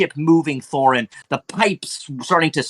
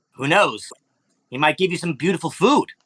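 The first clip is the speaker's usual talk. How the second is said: goblin character voice. Voicing goblins telling a player about a relative: goblin voice. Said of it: "they look at you".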